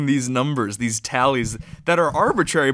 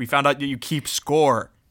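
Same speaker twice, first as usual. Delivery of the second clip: ordinary delivery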